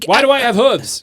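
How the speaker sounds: panicked shriek, very high and loud. A tabletop player's character discovers it has hooves: panicked screaming. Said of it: "freaking out, screaming".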